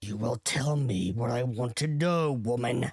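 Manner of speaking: raspy villain voice, every word rasped out. Graven holds a woman choking in the air; raspy Graven voice. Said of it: "says a raspy voice. Then you see it. A tall, slender form hovering above the ground with a tall, spiky crown and icy blue eyes. / A tall, slender form hovering above the ground with a tall, spiky crow".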